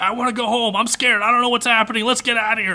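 sudden high, snapping yell, close to tears. Retelling a scene where a character snaps: imitating Miki yelling. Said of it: "snaps and yells at her".

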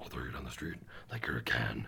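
very low, raspy, whispered growl. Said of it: "I'll do the Venom voice".

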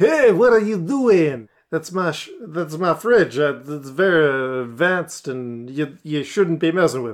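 put-on French chef voice. Game master voicing a chef catching a player at the fridge: [name] French chef voice. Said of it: "the French chef".

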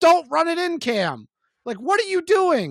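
high, swooping, shouted yelling. Recalling a play, the speaker reenacts screaming at the television: retelling screaming at the tv. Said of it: "I sat there screaming at my television".

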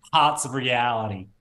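doing a Boston accent. Asked on the spot to say a phrase in a boston accent. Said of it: "give me a Boston accent. Say hots of reality".

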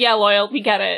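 ordinary talk

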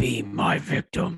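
horror killer villain voice. Taking a turn in an impersonation contest: Tony Todd Candyman impression with some Saw. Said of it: "a little bit of saw in there".

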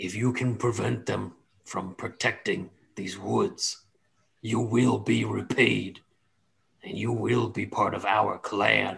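put-on big, mean orc voice. Voicing the orc clan boasting to a player: voicing the big mean orc leader. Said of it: "they look back at you and they say".

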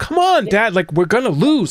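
put-on high, fearful, pressing tone. Retelling how a teammate urged her dad along: imitating a fearful urging. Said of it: "What I heard was, like, fear".

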